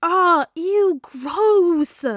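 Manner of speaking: ear-splitting, shrill, very loud shriek. Peter reacts as Tony and Stephen kiss, shrieking. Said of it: "Peter shrieked".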